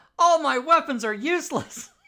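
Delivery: very high-pitched, very loud, put-on character yell. Declaring a character's reaction after an attack does no damage: yelling in character. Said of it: "he's gonna yell".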